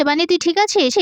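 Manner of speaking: ordinary delivery, nothing marked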